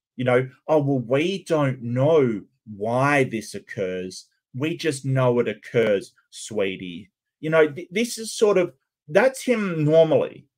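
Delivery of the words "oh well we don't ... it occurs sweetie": mock patronizing, condescending, sweetie-style talking-down voice. Mocking a speaker's manner: imitating talking down to a child. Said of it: "almost like someone talking to a child".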